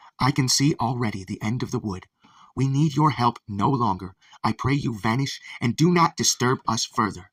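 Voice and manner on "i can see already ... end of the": plain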